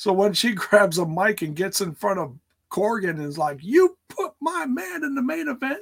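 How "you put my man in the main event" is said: put-on yelled high in a Southern accent. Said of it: "just yelling at him in the Southern accent".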